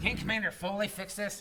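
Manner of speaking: plain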